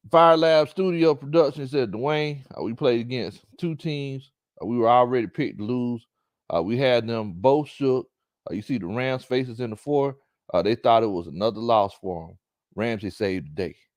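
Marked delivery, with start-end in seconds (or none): none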